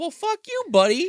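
high, mocking tone. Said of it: "And it's like".

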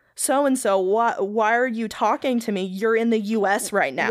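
ordinary talk

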